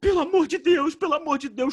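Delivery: put-on crying voice. Retelling a woman's plea for help in the street: imitating a crying plea. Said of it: "chorando no meio da rua".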